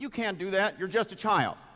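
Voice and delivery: high, loud, exasperated fatherly yell. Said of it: "he says".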